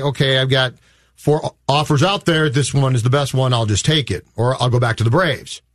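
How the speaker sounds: ordinary talk, nothing marked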